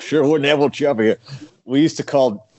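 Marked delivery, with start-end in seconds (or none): 0.0-1.2 put-on Appalachian hillbilly accent, higher. Recalling a character's old line, Appalachian hillbilly accent. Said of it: "You do a pretty good Appalachian hillbilly".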